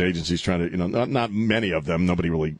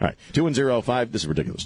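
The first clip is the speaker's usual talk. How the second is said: plain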